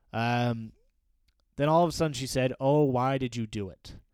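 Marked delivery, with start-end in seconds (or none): 2.5-3.9 mock-hurt, louder and slower. Retelling how a sister asked her brother a question, imitating someone sounding hurt. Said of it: "It made me sort of sad the way she said it".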